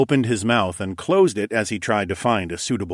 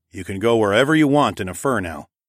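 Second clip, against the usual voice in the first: plain reading voice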